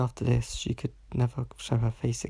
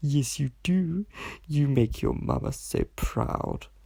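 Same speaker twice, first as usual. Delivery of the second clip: strange, slow, condescending, patronizing voice; 3 semitones higher than usual. Victoria squeezes her daughter Biddy's cheeks and speaks in a strange, patronizing tone. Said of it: "speaking in a strange, patronizing tone".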